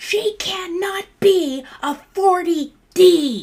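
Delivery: shrill, screeching, very high, very slow drawn-out scream. Retelling a customer's mother's outburst about a fitting: imitating a mother screaming. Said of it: "the mom started screaming at me".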